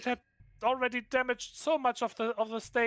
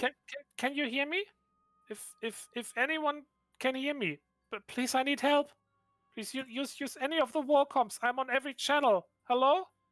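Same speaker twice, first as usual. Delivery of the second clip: small, frightened, stammering female voice; 2 semitones higher than usual. Voicing a woman calling for help over the satellite's PA system: small frightened female voice. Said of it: "small, frightened-sounding female voice".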